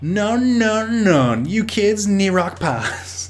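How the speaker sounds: put-on, devilishly sexy voice. Voicing a character's line in a story, devilishly sexy Jimmykin voice. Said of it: "I'm gonna do a voice for this, ... Devilishly sexy voice".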